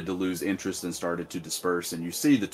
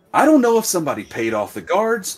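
shrill, very high, very loud, swooping, rising voice; 12 semitones higher, 9 dB louder than usual. A woman keeps talking to someone who complains she is yelling: voice rising even more. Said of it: "her voice raises even more".

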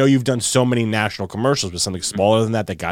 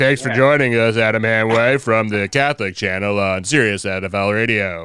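on-air radio host broadcaster voice. Recalling impressions of radio colleagues: Adam Shine impression. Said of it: "I'd probably do my Adam Shine".

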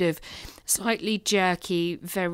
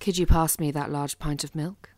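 put-on voice, as seductive and sexy as possible; 2 semitones lower than usual. Answering a request to say a line as sexily as possible: put-on sexy voice. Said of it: "make it as sexy as possible".

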